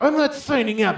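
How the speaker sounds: very loud, very high, macho-sounding voice. Retelling refusing when his wife says he's signing up, mock macho husband. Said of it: "trying to be this macho husband".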